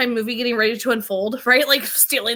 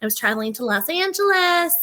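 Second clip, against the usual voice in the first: high-pitched, derisive put-on mocking voice; 5 semitones higher than usual. Recapping an episode, quoting Claire: mocking Claire voice. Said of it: "making fun of Claire mocking voice".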